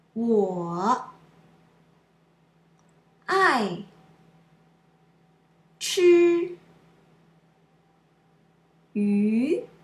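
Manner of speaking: each word apart with long gaps. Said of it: "word-by-word model sentence".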